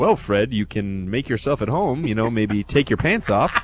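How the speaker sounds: acted bone-dry, very quiet, low, hushed deadpan. Retelling what one man said walking another into a booth, imitating a deadpan joke. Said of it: "in his deadpan humor goes".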